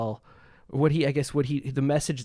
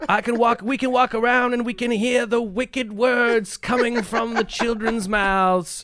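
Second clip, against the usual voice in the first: put-on Southern preacher voice, higher and louder; 11 semitones higher, 6 dB louder than usual. Retelling what an old preacher said about swearing: imitating a southern preacher. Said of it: "he was a Southern preacher".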